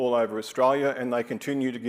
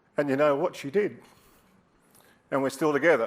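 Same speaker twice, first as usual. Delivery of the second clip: choked-up, emotional voice catching in the throat; 2 semitones higher than usual. Recalling meeting a partner at a pub years ago, getting choked up. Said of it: "Look at me getting all choked up".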